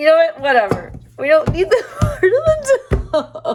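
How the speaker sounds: talking while cracking up. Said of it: "I can't stop laughing at myself".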